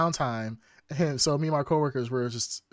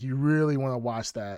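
plain

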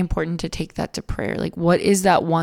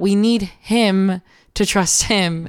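normal talking voice

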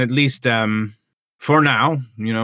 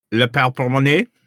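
bad, really terrible fake French accent; 3 semitones higher than usual. Trying out names for their invention, in a terrible French accent. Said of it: "I just do a really terrible French accent".

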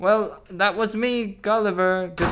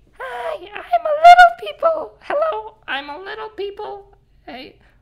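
very high, loud, tiny squeaky voice; 6 dB louder than usual. Taking a little person from a pocket to hand over, voicing Timmy. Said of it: "I'm taking him from my pocket".

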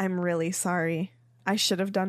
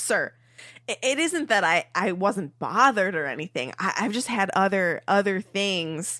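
ordinary delivery

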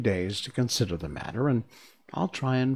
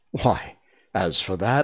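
usual speaking voice

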